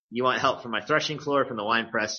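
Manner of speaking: ordinary delivery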